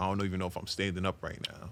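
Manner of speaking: plain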